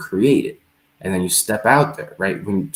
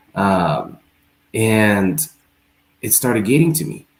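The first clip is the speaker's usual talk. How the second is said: plain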